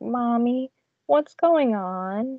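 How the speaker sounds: put-on high, cutesy child-actor voice. Explaining how child actors always talk, imitating a child actor. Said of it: "like, child actors talk. They're always like".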